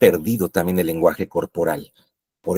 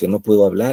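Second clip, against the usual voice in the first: plain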